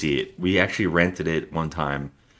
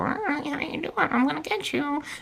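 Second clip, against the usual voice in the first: very high-pitched, duck-like cartoon voice; 5 dB quieter than usual. Podcaster describes the film's killer calling people: Donald Duck voice. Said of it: "The killer talks like Donald Duck".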